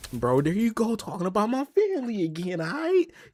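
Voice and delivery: put-on, very high, swooping, rising, heated, fired-up voice. Retelling how Jay reacted: imitating Jay getting heated. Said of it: "Jay was about to fire up".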